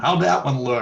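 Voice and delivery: loud yelling call.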